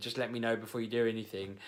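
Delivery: ordinary delivery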